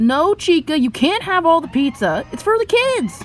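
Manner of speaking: very high, very loud, squealing animatronic voice. Showing what the character Bonnie sounds like: Bonnie voice. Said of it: "Bonnie sounds a little bit like this".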